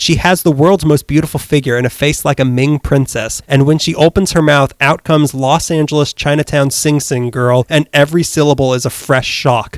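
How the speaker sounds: ordinary talk, nothing marked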